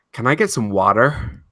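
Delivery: clumsy, bad put-on American accent. Asked on the spot to do an American accent: bad American accent. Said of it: "do an American accent".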